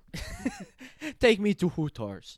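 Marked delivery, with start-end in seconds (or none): 1.1-2.3 loud mock Russian accent spoken through laughter. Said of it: "let's all try and do a Russian accent".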